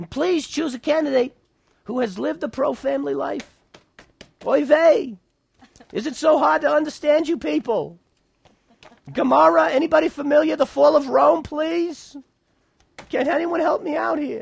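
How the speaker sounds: put-on New York accent, pitched very high.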